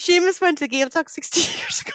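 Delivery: laughing through words, very high-pitched and giggly. Reading out a comment from Seamus: giggling while talking. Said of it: "Now I've got the giggles".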